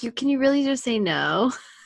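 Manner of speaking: ordinary delivery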